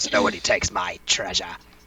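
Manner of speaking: deep, villainous, evil dragon voice. Voicing a character who has gotten more evil: evil dragon voice. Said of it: "I think this is his dragon voice".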